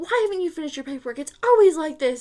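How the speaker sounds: frantic, upset, high-pitched, loud screaming. Retelling a supervisor screaming about unfinished paperwork: imitating someone screaming. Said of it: "she's just coming at you screaming".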